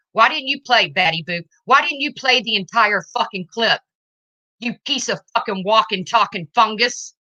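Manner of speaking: furious, shaking voice trembling with rage. Speaker confronts Laura over a clip she played for Dave; furious. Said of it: "I'm so fucking pissed right now".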